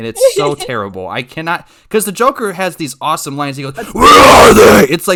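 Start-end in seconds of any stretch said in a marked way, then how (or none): 3.9-4.9 raspy voice at very loud, full volume. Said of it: "I'm gonna get throat cancer and talk".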